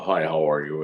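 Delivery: put-on dark man's voice. Retelling a man who approached the speaker, in a dark voice. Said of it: "he says to me in this dark voice".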